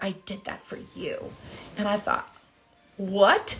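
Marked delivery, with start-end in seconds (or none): 0.0-1.3 close, soft, intimate whisper. Recounting the hug right after he won, the speaker is retelling a whisper. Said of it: "he whispers in my ear".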